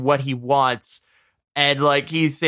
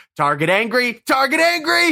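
very high, frantic, panicked repeated cry; 10 semitones higher than usual. Retelling a movie scene where the Hulk lunges at a pilot: imitating a panicked pilot. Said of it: "very panicked".

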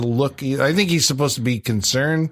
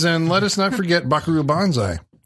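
normal talking voice

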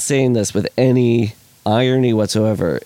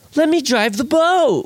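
amateurish stagey delivery, higher. Retelling a movie scene, imitating an actor: community theater line delivery. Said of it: "perfect community theater line delivery".

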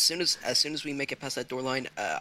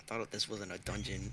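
muttering aside, lower and quieter; 4 semitones lower, 9 dB quieter than usual. Voicing a character reacting to a masked figure: mumbling off to the side. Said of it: "Adrian kinda, like, mumbles off to the side".

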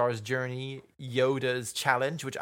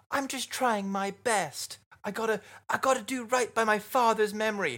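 put-on very high, likable, spirited young American voice; 9 semitones higher than usual. Describing a hero character, the speaker voices him in a likable American youth voice. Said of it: "likable American youth".

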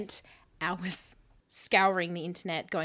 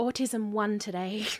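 mocking put-on voice; 3 semitones higher than usual.

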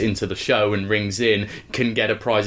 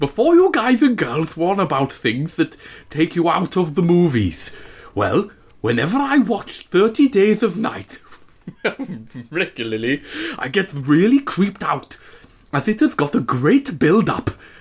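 put-on Welsh accent with a lisp, pitched higher; 8 semitones higher than usual. Reading out a message from the Facebook wall: imitating Stuart Baxter, Welsh lisp. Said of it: "Welsh with a lisp".

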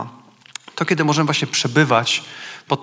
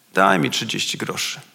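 put-on low, listless, bored voice; 5 semitones lower than usual. Speaker recounts a man he met while evangelizing; imitating a bored voice. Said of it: "takim znudzonym głosem mówi do mnie".

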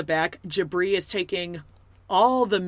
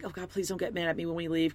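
mock pleading, acted-out begging tone; 8 dB quieter than usual. Retelling a wife pleading with her husband, acting out begging. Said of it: "begging him".

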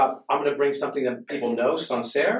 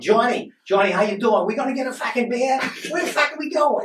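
put-on pitched way up, heavy, thick Boston accent; 11 semitones higher, 3 dB louder than usual. Telling how people heard a visiting brother, imitating Mark's thick Boston accent. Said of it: "His Boston accent is so fucking".

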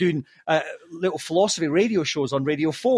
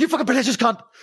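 put-on aggressive outburst, higher; 7 semitones higher than usual. Retelling insulting someone while high for the first time: imitating a coked-up outburst. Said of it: "bearing in mind it was the first time I did cocaine".

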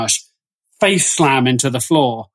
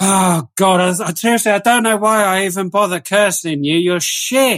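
exasperated demon voice, much higher pitched; 6 semitones higher than usual. Describing a demonic force giving up on cursing someone, in an exasperated demon voice. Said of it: "you just hear this sigh as they just lose like".

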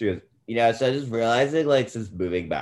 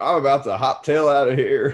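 mock-drunk Southern accent, babbling drawl; 3 semitones higher, 5 dB louder than usual. Recapping a tv episode, the speaker acts out a woman's line in a mock-drunk southern accent. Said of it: "babbling away in her drunk Southern accent".

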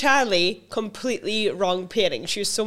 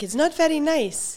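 put-on Dutch-Shetland accent, much higher, slower; 7 semitones higher than usual. Quoting her Dutch mum, long living in Shetland, in her mum's Dutch Shetland accent. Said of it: "My mum's Dutch and she's living in Shetland for so long. She talks like this".

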